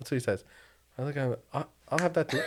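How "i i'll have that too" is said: higher-pitched, put-on British accent. Retelling ordering on a plane after a passenger from the uk: imitating own put-on british accent. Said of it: "All of a sudden you start changing your accent".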